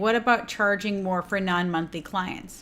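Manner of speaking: normal talking voice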